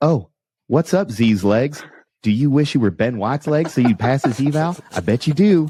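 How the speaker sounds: creepy-sounding voice. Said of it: "make Ben sound like Mister Herbert off Family Guy".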